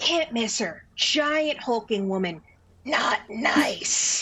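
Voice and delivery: quiet, under the breath. Imitating a woman warning to steer clear of someone, lowered voice. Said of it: "she kind of like lowers her voice".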